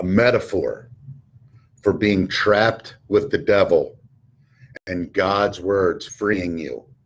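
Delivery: very deep, flat, droning single-note delivery. Retelling what a man told him about the story, deep monotone voice. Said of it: "he had this real deep monotone voice".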